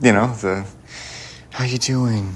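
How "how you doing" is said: put-on pitying, sympathetic voice. Telling the listener she never does it with her, mimicking a pity voice. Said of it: "You never do the pity voice with me".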